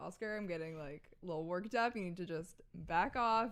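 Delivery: ordinary talk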